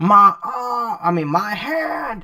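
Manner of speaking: acted scream of pain. Recapping a fight scene, voicing a wounded character, acting out a pained scream. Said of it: "He's screaming".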